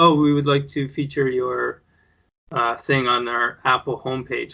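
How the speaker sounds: ordinary talk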